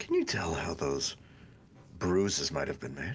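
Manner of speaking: whispering. Leaning into someone's ear to ask a question: whispering. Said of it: "I'm gonna whisper to Arthur".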